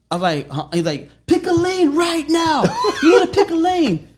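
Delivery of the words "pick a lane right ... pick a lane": mock very high, loud, angry yelling. Retelling what another driver yelled while they drove: imitating someone yelling. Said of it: "He starts yelling at me".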